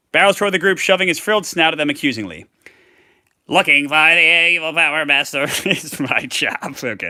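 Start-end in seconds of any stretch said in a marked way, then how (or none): 3.4-6.7 bad, slightly higher-pitched frog voice. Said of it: "that's not a good frog voice".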